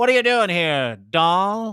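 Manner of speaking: forties radio character voice. Acting out a line from old forties radio skits: imitating 1940s radio drama character. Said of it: "those old radio skits from the forties".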